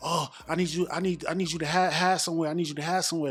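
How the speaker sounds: put-on panicked voice. Retelling her urging him to hide as banging starts: imitating someone panicking. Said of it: "totally panicking".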